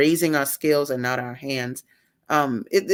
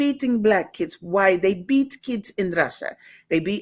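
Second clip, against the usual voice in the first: clumsy, shaky, bad put-on Russian accent; 4 semitones higher than usual. The speaker quotes a russian lady commenting on her book, in a bad russian accent. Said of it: "I can't do the accent good".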